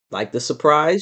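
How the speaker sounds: ordinary delivery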